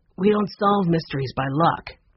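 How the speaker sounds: ordinary delivery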